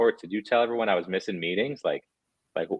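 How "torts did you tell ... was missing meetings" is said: ordinary talk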